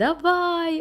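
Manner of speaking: high, stretched, drawn-out, cheerful and happy. Reading a children's story aloud, the worm answers the bee, smiling. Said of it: "усміхнувся черв'ячок".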